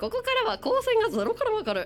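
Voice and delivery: deliberately odd intonation, ゼロからわかる swung way up high.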